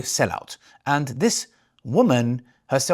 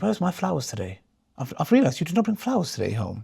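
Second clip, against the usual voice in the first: mock posh woman voice, posh accent; 2 semitones higher, 3 dB quieter than usual. Mocking a woman by voicing her asking her husband, mock posh woman voice. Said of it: "She sounds very posh as well".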